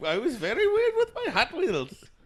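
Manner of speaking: very high-pitched, mixed Indian and German accent. Trying out the mixed accent a co-host described, blended Indian-German accent. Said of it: "Indian accent and like a German accent".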